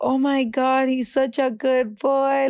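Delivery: play-acted delighted gushing, high and drawn out. Telling how everyone reacted when he lowered the window, retelling everyone screaming. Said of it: "Everybody started screaming like".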